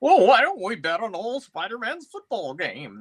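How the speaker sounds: high, swooping character voice. Retelling a comic book scene, voicing the Watcher as the speaker imagines him. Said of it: "That's the way I've always imagined the Watcher's voice".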